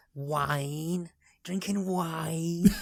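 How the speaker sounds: attempted Scouse accent. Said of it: "Stop now. I've unleashed Pandora's box".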